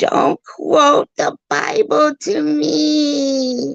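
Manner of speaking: very high, slow, drawn-out devil screech. Mimicking how the other person sounded, screeching like a devil just hit with holy water. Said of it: "the devil that had just been thrown holy water on, screeching".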